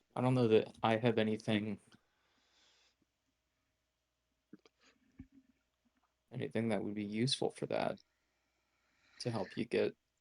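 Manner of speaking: quiet whispering. Speaking in character to a book while others listen: trying to whisper. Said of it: "really trying to whisper".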